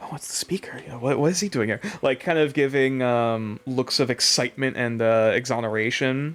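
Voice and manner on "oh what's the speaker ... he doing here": quick, hushed, half-whispered stage-whisper chatter. Voicing excited onlookers as a character passes: put-on half-whisper of onlookers. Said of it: "looking over and whispering".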